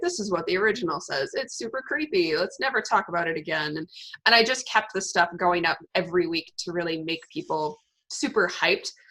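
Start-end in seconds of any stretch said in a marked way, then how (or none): 0.0-3.8 mock, very sarcastic put-on tone. Recalling weekly posts before a book launch, retelling one in a mock-sarcastic tone. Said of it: "I kind of like did a very sarcastic".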